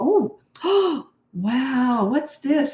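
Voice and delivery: put-on very drawn-out, high, slow, animated childlike wonder. Speaker demonstrates how to get little children's attention: animated voice for kids. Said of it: "So that's how I would talk".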